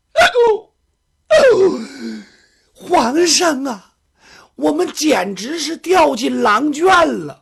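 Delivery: tearful, wailing, sobbing voice. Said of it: "行，行，行，别哭了".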